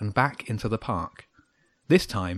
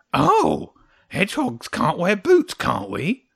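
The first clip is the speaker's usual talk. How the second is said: high, drawn-out, sing-song taunting mockery; 7 semitones higher, 5 dB louder than usual. A hedgehog in a story answers Jenny's remark, mocking. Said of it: "the hedgehog said mockingly".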